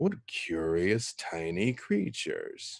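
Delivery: soft muttered aside, under the breath. A game master voices a figure speaking to the party in Celestial, muttered under his breath. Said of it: "kind of under his breath a little bit".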